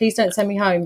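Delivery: put-on crying, tearful begging. Retelling arriving at the hospital in labour, retelling a crying plea. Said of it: "I remember crying, going".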